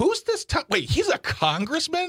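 very high, squeaky, baffled, incredulous voice.

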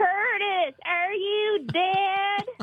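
put-on high, slow Southern-accented holler. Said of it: "she's very Southern in the movie, and she, she yells out".

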